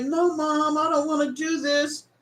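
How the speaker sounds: put-on teenage girl's voice, crying and in tears. Retelling a daughter pleading with her mom, imitating a crying girl. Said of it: "The girl was literally crying".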